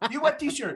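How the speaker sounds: put-on yelling. Retelling what a store owner said when asked about shirts: imitating someone yelling. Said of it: "She starts just yelling at me".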